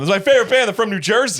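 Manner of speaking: put-on shrill, very high, loud yelling. Telling a story about a man sharing headphones with a woman, imitating a man yelling. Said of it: "He's yelling because he's deaf in one ear".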